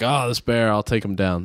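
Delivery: plain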